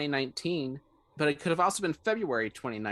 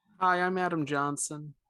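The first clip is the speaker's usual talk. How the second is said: downbeat, slightly sad tone; 2 semitones higher than usual. Podcast co-host introducing himself at the start of the show, a little sad. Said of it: "you sound a little sad".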